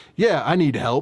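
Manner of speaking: put-on mildly sarcastic tone. Retelling a reply to a website chat bot, retelling a sarcastic reply. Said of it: "like kind of sarcastically".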